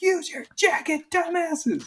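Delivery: mock very high, drawn-out yell, words stretched. Retelling watching a recording, imitating own yelling at the screen. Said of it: "I'm yelling at the screen".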